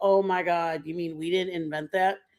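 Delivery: normal talking voice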